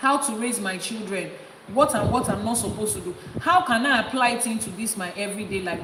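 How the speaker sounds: ordinary talk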